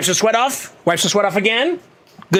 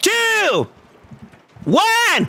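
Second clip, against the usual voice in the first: loud yelling, screaming, higher pitch; 14 semitones higher than usual. Counting down to a spin: screaming. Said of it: "as I continue to scream".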